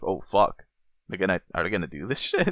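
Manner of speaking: ordinary delivery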